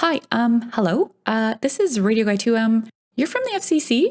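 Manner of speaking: mock halting stammer. Retelling the second radio guy answering the phone: imitating a stammering man. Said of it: "also stammering".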